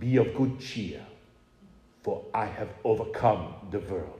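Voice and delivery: put-on low, rich, full Hungarian Hebrew accent. Speaker quoting Scripture as Sixai once said it, in Sixai's rich Hungarian Hebrew accent. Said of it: "in his rich Hungarian Hebrew accent".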